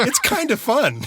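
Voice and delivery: bright overexcited delivery. A host quotes a guest's comment they want as a show phrase, mock-excited quoting. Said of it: "I wasn't quite that excited the way I said it".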